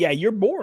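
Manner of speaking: usual speaking voice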